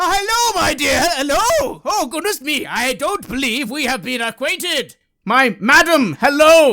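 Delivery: loud, shrill, very high-pitched voice. Game narrator voices a stranger suddenly greeting the player: loud large bearded man. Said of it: "suddenly there's a loud noise next to you".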